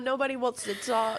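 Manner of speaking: put-on furious voice. Retelling busting down a hallway after frustrating calls: imitating own angry outburst.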